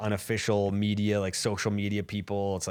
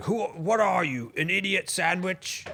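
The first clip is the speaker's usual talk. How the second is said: very high-pitched yell, stretched out; 11 semitones higher than usual. Describing the celebrity chef who yells at people: imitating Gordon Ramsay yelling. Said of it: "the guy that yells at people and he's like".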